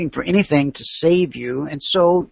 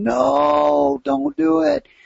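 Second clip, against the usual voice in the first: re-enacted scream, much higher, slower; 11 semitones higher than usual. Speaker recalls shouting at people about to go live, retelling a scream. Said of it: "And I'm screaming".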